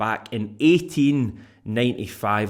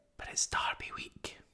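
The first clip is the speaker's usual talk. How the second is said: hushed, barely voiced, very quiet whisper aside. Listing the week's topics, whispering the derby week mention. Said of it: "whisper it, ... when I started doing that whispering thing".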